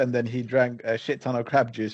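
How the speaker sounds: plain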